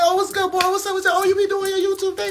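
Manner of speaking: very high, friendly, warm, optimistic voice. Imitating how a Sagittarius's friends greet you: imitating Sag people talking. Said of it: "And they gonna talk like this".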